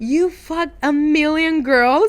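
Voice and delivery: play-acted, high, freaked-out screaming yell. Retelling what was said to a situationship on learning about other girls: retelling own screaming. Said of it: "screaming at him for forty minutes".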